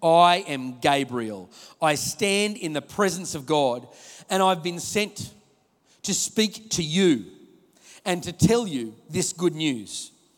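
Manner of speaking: slow, firm, deliberate commanding voice. Retelling the angel's announcement to Mary, in a put-on firm Gabriel voice. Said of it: "I'm sort of putting on a pretty firm voice".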